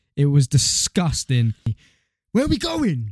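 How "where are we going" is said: sudden, high-pitched shout. Retelling what he kept asking: imitating someone shouting. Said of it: "And he's shouting this".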